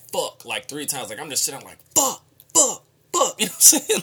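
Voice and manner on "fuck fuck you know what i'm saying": shrill, very high, loud full-throated yelling. Speaker retells cursing out loud in a waiting room, retelling a loud yell. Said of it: "I literally yelled out".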